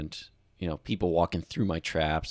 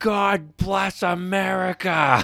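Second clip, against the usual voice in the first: very loud, very high shout; 14 semitones higher, 9 dB louder than usual. Telling a story from the ice, a guy in another group: retelling a yell. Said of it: "one guy just yells out".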